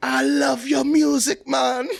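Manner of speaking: drawn-out, very high, slow Jamaican patois. Retelling a skit's jamaican character: imitating jamaican patois. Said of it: "In patois".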